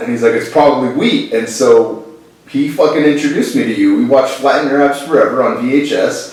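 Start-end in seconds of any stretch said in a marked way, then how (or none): 0.3-1.3 put-on heavy, thick New York accent. Quoting a man's reply in their conversation, thick New York accent. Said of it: "he's got a thick New York accent".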